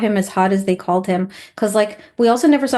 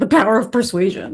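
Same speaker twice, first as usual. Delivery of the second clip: glossy, put-on beauty-commercial tagline voice. Imagining the phrase spoken in a mascara ad: mascara ad voice. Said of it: "a mascara ad".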